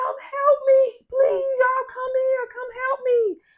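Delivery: shrill, very high, frantic, pleading cries. Retelling a story, the speaker imitates Sherry yelling from her porch for help. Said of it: "she just started yelling".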